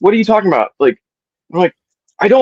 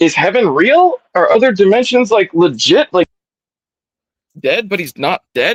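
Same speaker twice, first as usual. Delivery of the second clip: ordinary talk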